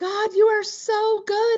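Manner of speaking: mock overjoyed shriek, very high, joyful. Retelling opening an unexpected check alone in the car: retelling a scream. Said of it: "I'm just screaming".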